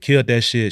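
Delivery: ordinary talk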